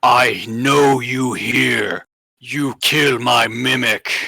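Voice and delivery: booming, halting, broken Common speech. Narrating a scene, the speaker voices a creature speaking in broken Common. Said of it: "in a very broken common you hear".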